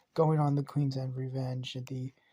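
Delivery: ordinary delivery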